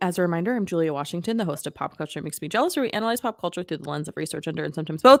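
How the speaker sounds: very fast, rushed, rattled-off host-style delivery. Host reintroducing their show to listeners, very fast. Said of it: "I said that really fast".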